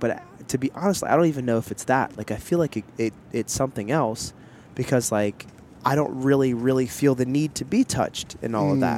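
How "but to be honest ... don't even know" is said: plain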